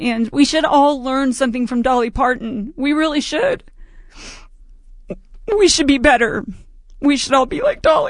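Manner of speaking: talking through tears, tearful, crying while speaking. A radio host signing off to listeners, crying while speaking. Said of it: "I'm so sorry for crying".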